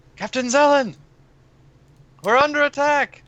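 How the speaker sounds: very high, loud, alarmed shouted yell. Warning the captain in character that they are under attack: yelling a warning. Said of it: "start yelling".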